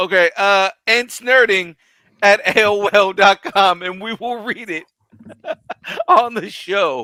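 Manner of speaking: fighting back laughter. Podcast host reading out the show's email address, holding back a laugh. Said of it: "I'm trying not to laugh on Mike".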